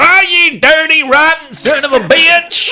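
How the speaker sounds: fake angry Southern accent, shrill, booming, very loud. Speaker imitates a man who fakes a southern accent once provoked. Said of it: "he doesn't have a southern accent. No, but he's faking it".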